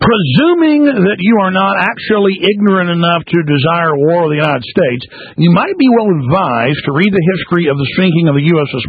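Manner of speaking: normal talking voice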